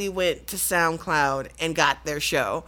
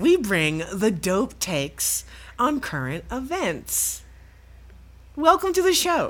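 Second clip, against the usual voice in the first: programmed, perfect robot-like delivery; 4 semitones higher than usual. Podcast co-host reading the show's opening intro, in a robotic Stepford Wives voice. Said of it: "You sound like a robot".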